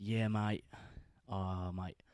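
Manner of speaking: put-on Australian-sounding accent. Retelling how they talked when they came back, in a more Australian-sounding accent. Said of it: "that sounded more Australian".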